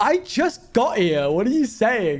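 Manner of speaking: acted affronted, taken-aback, high, offended tone. Speaker imitating how the listener sounds, mock-offended. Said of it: "You sound like so offended".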